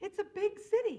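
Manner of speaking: high, loud, emphatic, defensive tone.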